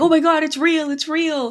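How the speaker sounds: play-acted shrill, very high-pitched hollering. Retelling teenagers in the audience as the movie logo appears: imitating teenagers yelling. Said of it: "they're yelling".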